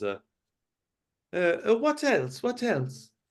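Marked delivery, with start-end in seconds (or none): 1.3-3.1 very high, startled squeak. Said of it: "and says".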